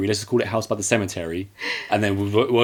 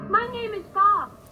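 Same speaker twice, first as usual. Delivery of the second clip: put-on stupid voice, higher and quieter; 6 dB quieter than usual. Answering a question about a forgotten name in Bob's stupid voice. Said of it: "And his stupid voice".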